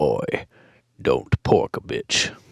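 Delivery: deep, slow, hushed warrior-like whispered voice. Telling how he answered a friend who woke him up, Kratos voice. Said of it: "almost dead on Kratos voice".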